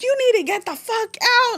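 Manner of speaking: very high, shrill, furious yelling. Retelling how a mother yelled on finding out: imitating mom yelling. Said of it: "she's just yelling at me".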